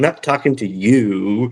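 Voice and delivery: dry, flat, slow deadpan, drawn-out "you". Retelling how he turned to Seth: imitating a deadpan reply. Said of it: "deadpan goes".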